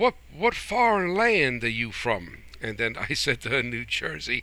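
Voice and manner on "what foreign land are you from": slow southern belle drawl, Georgia-style twang. Retelling what a waitress asked when stopping to eat, southern belle accent. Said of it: "with her southern belle accent, her southern twang".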